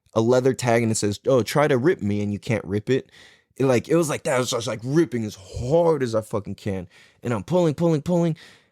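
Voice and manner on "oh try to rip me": ordinary talk, nothing marked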